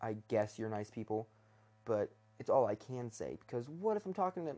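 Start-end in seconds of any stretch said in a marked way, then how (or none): none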